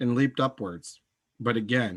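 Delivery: plain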